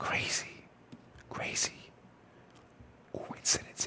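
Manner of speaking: hushed whisper, almost no voice, barely audible. Speaker telling viewers about a source reappearing, whispering. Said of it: "I'm whispering".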